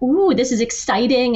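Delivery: plain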